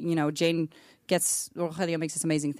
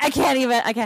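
mock helpless, uncontrollable laughter; 7 semitones higher, 7 dB louder than usual. Retelling someone on set who couldn't stop laughing, imitating someone laughing uncontrollably. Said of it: "she couldn't stop laughing".

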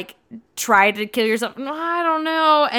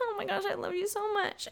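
mock tearful crying voice, high and very quiet; 9 semitones higher, 13 dB quieter than usual. Retelling a scene, voicing Bella: imitating Bella crying. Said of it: "Bella's just crying and is like".

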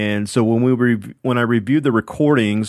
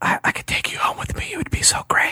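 whispered murmur, breathy, hushed, barely voiced; 5 dB quieter than usual. Retelling a voice the speaker heard, imitating a whisper. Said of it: "this whisper that is like".

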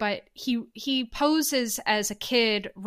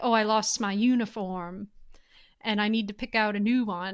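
put-on older Southern gentleman accent. Retelling how he called to get a new uniform, in an older Southern gentleman accent. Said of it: "he puts on like kind of this like Southern accent, like he's like an older Southern gent".

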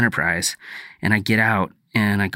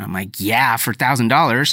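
ordinary delivery

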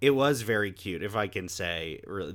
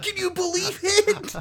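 mock thrilled, very high excited child's exclamation; 4 dB louder than usual. Retelling how a kid turned around after the post-credit scene: imitating an excited kid. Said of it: "he got so excited".

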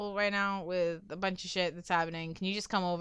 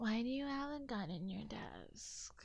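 put-on very quiet, soft, innocent doe-like baby-deer voice; 3 semitones higher, 12 dB quieter than usual. Retelling a movie scene where a woman asks him about a gun, baby-deer voice. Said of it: "And just baby dear voice".

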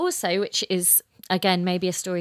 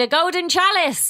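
very high, loud, genuinely thrilled excited shout; 12 semitones higher, 7 dB louder than usual. Retelling seeing a chalice in a shop window: retelling own excited shout. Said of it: "and I shouted".

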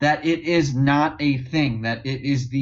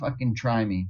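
blunt, daring, spat-out, in-your-face defiance; 4 semitones lower, 5 dB quieter than usual. Retelling how the governor goes hard: imitating a defiant governor. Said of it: "the legit spit in your face".

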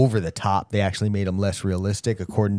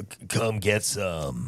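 very slow, deliberate, drawn-out delivery; 6 dB quieter than usual. Quoting another corny action hero slogan: Duke Nukem impression. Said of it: "That's your best impression yet".

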